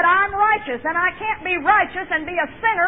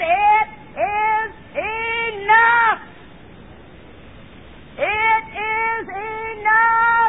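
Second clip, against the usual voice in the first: very slow, drawn-out hollered proclamation, each word stretched; 4 semitones higher than usual. Preacher acting out Jesus crying out three words, retelling a holler. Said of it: "he hollers out three words".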